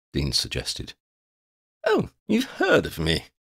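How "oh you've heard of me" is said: very high pitched voice, delighted and proud. Quinn answers Dean, who has guessed his name: proud and delighted. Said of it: "Quinn said with pride and delight".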